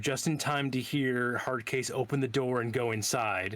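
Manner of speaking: plain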